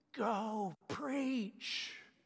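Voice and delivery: put-on loud stage whisper, like a little child. Retelling what the speaker's three-year-old whispered during communion, imitating a three-year-old's loud whisper. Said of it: "but a three-year-old whisper, which is really loud".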